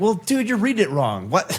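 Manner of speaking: play-acted prickly, aggressive, high, agitated defensive tone. Describing how someone reacts to feedback, mimicking them: mock defensive, agitated reply. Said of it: "gets super defensive and almost agitated and aggressive".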